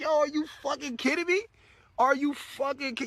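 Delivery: laughing while talking. Retelling a reply to a message from a group administrator: retelling laughing while talking. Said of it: "I just busted out laughing like".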